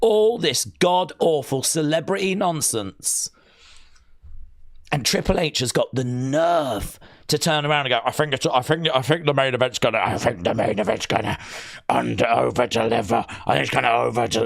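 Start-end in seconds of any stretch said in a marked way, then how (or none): 8.0-14.5 low, deep, dropped character voice. Mocking a prediction about the main event: Triple H impression. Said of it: "That's my Triple H. That's my, when I'm angry".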